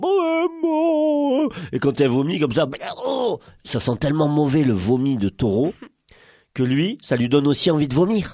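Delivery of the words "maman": high, frightened crying out. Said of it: "il était là genre".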